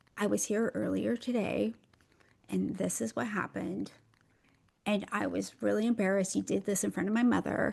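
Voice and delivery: self-conscious, very quiet, soft-spoken speech. Recounting how they spoke after walking in there, very quiet speech. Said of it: "to speak like this, to very, very quiet".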